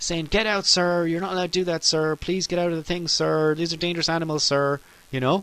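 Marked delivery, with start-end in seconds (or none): 0.3-4.8 put-on frantic, worked-up park ranger, screaming and pleading. Retelling a park ranger's warning to leave the alligators: imitating a park ranger screaming. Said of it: "this Florida park ranger screaming at me".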